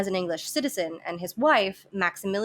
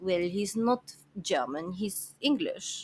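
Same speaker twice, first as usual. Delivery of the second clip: soft, dismissive, put-on French accent; 5 dB quieter than usual. Speaker voices Coco's excuse about Spatz, in a Coco impression with French accent. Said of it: "My French and my German accents are very close".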